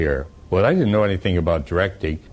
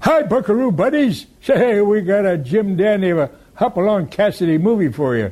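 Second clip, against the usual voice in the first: put-on very high-pitched old cowboy codger voice; 12 semitones higher than usual. Recreating their character from another host's Saturday cowboy show: Chuck Wagon Chuck old-timer voice. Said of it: "a character called Chuck Wagon Chuck, the old-timer".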